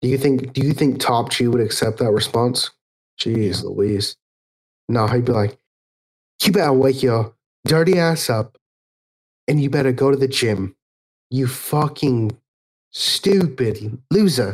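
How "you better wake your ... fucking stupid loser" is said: fake British accent with American showing through. Asked whether Top G would accept a sick excuse, the speaker answers as him: Top G impression, trying to sound British. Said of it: "trying to sound British".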